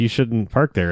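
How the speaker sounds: usual speaking voice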